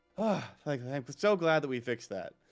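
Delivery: exhaled, sighing, relieved voice. Retelling how Petra reacted as the room lit up: imitating Petra's relieved sigh. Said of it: "sigh of relief in his, in his voice".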